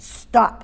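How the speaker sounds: clipped, short, sharp stop. Demonstrating the command word used to halt an action, short sharp 'stop'. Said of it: "nice sharp word".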